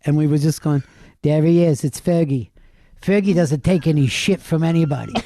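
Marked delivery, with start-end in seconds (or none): 1.2-5.1 put-on, made-up teasing voice. Retelling teasing a quiet friend with a made-up voice for Ferg. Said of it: "made up this voice for him".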